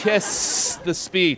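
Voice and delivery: emphatic, very slow, drawn-out stress on "kiss the speech".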